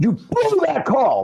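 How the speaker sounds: play-acted very high, shrill yell. Retelling yelling at a referee after a bad call: retelling own yell. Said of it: "I yelled".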